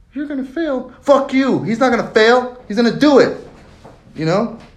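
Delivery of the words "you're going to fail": meek, timid, weak-willed, pitched-up inner voice. Acting out the weak inner voice predicting failure: acting out the weak inner voice. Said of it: "The other voice turns into a cuck".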